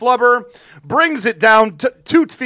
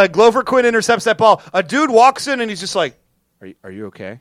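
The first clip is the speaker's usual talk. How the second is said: usual speaking voice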